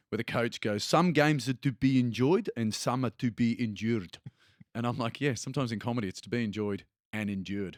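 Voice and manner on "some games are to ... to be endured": put-on South African accent, unhurried. Retelling a coach's line from a documentary, in a south african accent. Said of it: "it's funnier in a South African accent".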